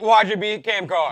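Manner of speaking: put-on sarcastic delivery. Retelling another speaker's earlier remark to argue its meaning: imitating a sarcastic remark. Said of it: "that was a sarcastic".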